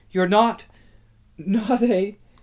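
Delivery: trembling, shaky, high voice, trailing off unfinished. A girl asks someone she thought was dead, in a shaky voice. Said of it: "asked Susan in a shaky voice".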